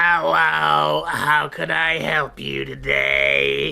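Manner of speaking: put-on very slow, creaky elderly woman voice. Voicing a halfling woman at Child Protective Services greeting a visitor: old halfling woman voice. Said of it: "halfling woman ... Goes".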